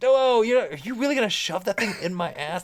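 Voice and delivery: high, giggly, laughing-through-it disbelieving voice. Retelling own words as a tube is being inserted, imitating laughing while talking. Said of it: "like, laughing, and I'm like".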